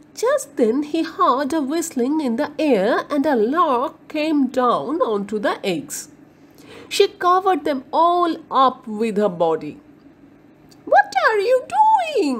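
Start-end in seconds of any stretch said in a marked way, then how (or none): 10.9-12.4 very high, angry outcry. A lark covering her eggs confronts an onlooker, cried angrily. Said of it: "She cried angrily at Willy".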